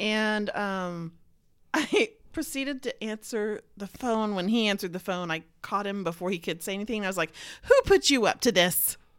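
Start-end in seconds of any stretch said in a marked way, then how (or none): 7.6-8.9 teasing, playful, joking tone with raised pitch. Answering a call in front of friends, speaker retells asking the caller jokingly.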